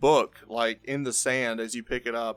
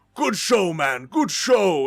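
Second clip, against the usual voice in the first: loud, pitched-up, echoing minotaur bellow; 5 semitones higher, 5 dB louder than usual. Narrator voicing Drake the Minotaur slapping Zivs on the back, bellowing. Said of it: "this bellowing uh, Minotaur voice".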